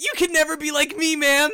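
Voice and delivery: high, loud, goofy slacker voice. A character looks over at another across the plaza, Shaggy voice. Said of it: "switching it to fully Shaggy's voice".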